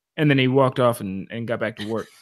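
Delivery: normal talking voice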